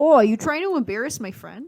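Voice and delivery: fake Wisconsin way of talking. Reworking the scene just described, the speaker tries a put-on Wisconsin accent. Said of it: "That's how it would sound if he was in Wisconsin".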